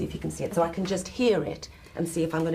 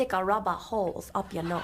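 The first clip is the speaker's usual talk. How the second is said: attempted Geordie accent; 2 semitones higher than usual. Coached by the other speaker to repeat a phrase, attempted Geordie accent. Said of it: "You're my honorary Geordie".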